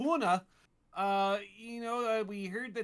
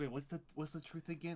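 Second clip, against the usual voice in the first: low, very quiet whispering; 5 semitones lower, 11 dB quieter than usual. Character whispering back to a companion who whispered first: whispering back. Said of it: "As I whisper back".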